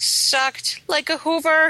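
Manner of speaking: high, loud, slow, exaggerated disgusted rant.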